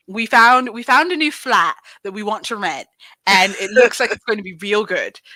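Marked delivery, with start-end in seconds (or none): 0.2-2.9 put-on English accent, slipping away. Chatting with the others, the speaker slips into an English accent. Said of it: "that was that accent".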